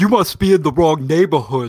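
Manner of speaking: put-on very heavy, thick, loud New York accent. Retelling what a man with an Uzi says, in a very thick New York accent. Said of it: "with a very thick New York accent".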